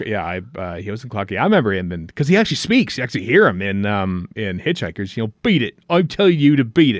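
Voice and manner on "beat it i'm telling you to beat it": put-on high-pitched English West Country accent. Quoting an actor's line from Hitchhikers, West Country accent. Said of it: "in his uh, characteristic West Country accent".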